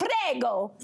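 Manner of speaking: "prego" belted out in a fake Italian accent. Describing Noah's awkward dating moment in Nobody Wants This: Noah's faux Italian prego. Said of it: "too loudly in a faux Italian accent, like I just did".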